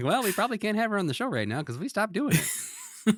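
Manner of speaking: very high, pleasant-toned, cutting. Retelling Jim's cutting reply while smiling: imitating Jim's pleasant smiling delivery. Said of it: "he is just smiling as he's like".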